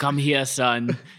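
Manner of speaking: imitated Austrian accent. Recapping a movie scene where the dad reveals himself to his son, Turbo Man's Austrian accent. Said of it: "with his Austrian accent".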